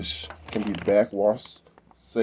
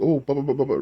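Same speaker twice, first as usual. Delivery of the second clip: rapid, rattled-off, pitched-up blather; 7 semitones higher, 4 dB louder than usual. Mocking people who make pool pump videos: mocking fast-talking pool video hosts. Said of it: "talking real fast".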